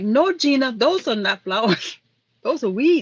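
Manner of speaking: put-on slight Hawaiian accent. Retelling what a woman told her on the island, imitating her little accent. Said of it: "They have that little accent".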